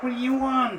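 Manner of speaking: tiny, small, very high-pitched voice. Players ring at a door and a voice answers from the other side: small voice. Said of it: "You hear a small sounding voice".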